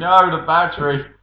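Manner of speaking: loud, high alarmed shout. Recalling commentary where he and Rob shouted together, retelling a shout. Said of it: "just me and Rob just shouting".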